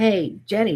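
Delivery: imitated American man's accent. Retelling a faint man's voice heard on the recorder: imitating an American man's accent. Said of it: "a man saying in an, an American accent".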